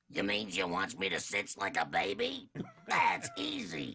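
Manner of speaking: low, rasping, buzzsaw-in-the-throat sailor-style voice. Recalling his hardest job ever, voicing Popeye, buzzsaw in the throat. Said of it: "like a buzzsaw in your throat".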